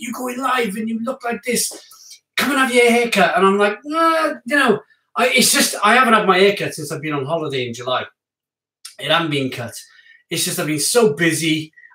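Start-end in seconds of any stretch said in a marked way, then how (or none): 0.0-3.4 mock high-pitched screaming. Retelling what the hairdresser keeps telling him: imitating someone screaming. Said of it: "he's screaming at me".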